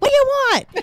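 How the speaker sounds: mock, very high, exasperated, aggravated, snapping voice. Recounting a man pulling in beside her on the roadside, mock-aggravated. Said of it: "by then I was so aggravated".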